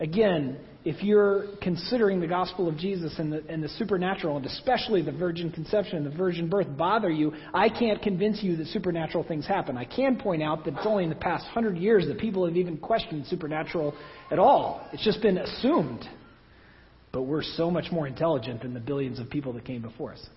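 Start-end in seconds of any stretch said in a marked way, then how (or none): 17.1-20.3 low, soft, somewhat dry sarcastic tone. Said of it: "somewhat sarcastically".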